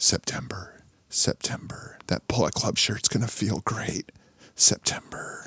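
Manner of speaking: put-on mutter under breath. Retelling what he said under his breath; retelling a mutter under breath. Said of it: "under his breath".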